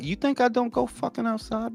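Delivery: acted-out mocking, taunting, teasing parody voice. Retelling the other speaker's jab about going outside: imitating the other speaker mockingly. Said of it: "This motherfucker's like".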